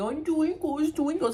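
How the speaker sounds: high, mocking baby-talk voice. Mocking a dog owner's way of talking to her dog, in a baby voice. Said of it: "just using your baby voice saying".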